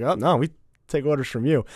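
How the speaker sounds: usual speaking voice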